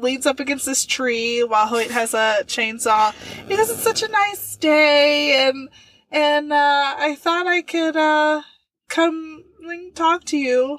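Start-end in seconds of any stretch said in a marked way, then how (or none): 3.7-10.8 acted casual, offhand, slow, nonchalant, drawn-out. Retelling a scene where Jason approaches Hoyt, imitating Jason's nonchalant tone. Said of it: "nonchalant at first".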